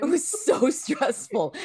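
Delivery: high voice, words broken up by laughter. Recalling a very stressful time with another speaker, laughing while talking. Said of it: "I don't know why I'm laughing".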